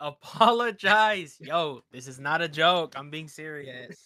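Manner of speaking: very loud, slow speech through laughter. Telling another speaker to apologize for cursing at his mom, laughing while talking. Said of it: "Then why are you laughing?".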